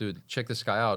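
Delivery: ordinary talk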